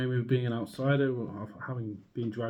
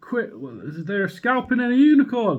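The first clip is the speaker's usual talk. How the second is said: horrified shout, much higher in pitch; 9 semitones higher, 7 dB louder than usual. Retelling how they shouted at a man to stop: retelling a horrified shout. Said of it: "So I just shouted to him like".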